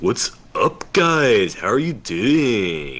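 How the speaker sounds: put-on thick Californian surfer dude voice. Imagining talking this way all the time: heavy Californian accent. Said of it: "With a really heavy Californian accent all the time".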